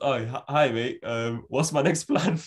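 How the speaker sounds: slow, halting put-on manager voice, stumbling start, drawn out. Imagining Steve Bruce meeting the new owner: imitating Steve Bruce. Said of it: "And he goes".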